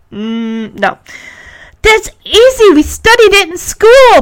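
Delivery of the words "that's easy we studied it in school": very high, eager, excited outburst of delight. Punky jumps up and down and answers before Henry can, excited. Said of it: "Punky says excitedly".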